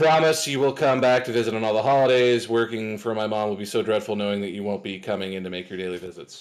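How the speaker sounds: dead level, flat monotone, no inflection. Retelling being asked to read a part from a play: flat monotone reading. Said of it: "So I just very monotone".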